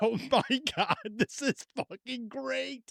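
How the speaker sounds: laughing while talking. Retelling her own reaction while someone gets mad, retelling laughing while talking. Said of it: "tears streaming down my face".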